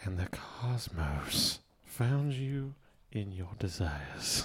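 smooth buttery tone. Asked to talk in that buttery voice, the speaker obliges; buttery voice. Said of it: "talk to me in that buttery voice".

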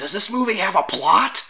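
imitated whispered disbelief. Retelling what an old lady behind them at the theater asked, imitating an incredulous whisper. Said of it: "whispered, like".

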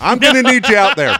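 all-out high, full-volume, shrill yell. Imitating a coach as a dad at home: loud Brian Dutcher impression. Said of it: "Just all loud".

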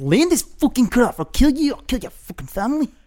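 mock intense, acted delivery. Imitating an actor who is always intense: imitating an intense actor. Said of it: "He's always so intense".

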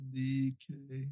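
deliberately very slow, drawn-out talk.

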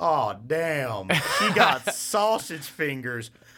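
slow, exaggerated elderly male voice. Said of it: "like most stereotypical voice".

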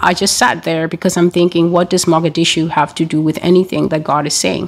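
ordinary delivery

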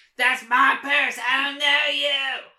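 put-on high, loud cartoon kid voice. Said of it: "I guess I have to try now".

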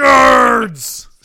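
very loud, drawn-out, jeering jock bellow. Repeating a co-host's outburst, in a Revenge of the Nerds jock voice. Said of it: "You sounded like a jock from Revenge of the Nerds".

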